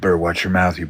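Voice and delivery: mock-threatening, aggressive. Recounting a sound booth guy threatening him over the Prophet: retelling an aggressive threat. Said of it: "got real fucking aggressive".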